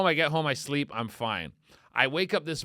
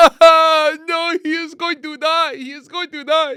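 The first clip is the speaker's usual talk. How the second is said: loud, high, shrill bawling in a bad French accent; 12 semitones higher, 11 dB louder than usual. Retelling a wife crying as her husband had a heart attack: bad French accent, imitating crying. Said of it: "That's not a good French accent".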